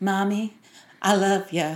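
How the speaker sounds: slow put-on American accent, a bit of a cowboy. A mother imitating her child walking in, in a put-on American accent. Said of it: "In American accent".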